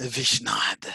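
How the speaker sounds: hushed word, half-whispered under the breath. Voicing Nico casting a word under his breath: half-whispering in character. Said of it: "whisper a word under his breath".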